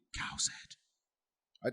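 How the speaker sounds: soft, hushed, spooky whisper. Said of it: "I can't hear you".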